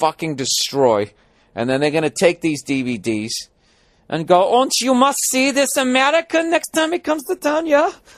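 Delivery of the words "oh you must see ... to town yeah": clumsy put-on Danish accent, very high-pitched. A comedian imagines Danish fans praising his show DVDs, in a bad Danish accent. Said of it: "I keep making you guys talk like fucking SS people".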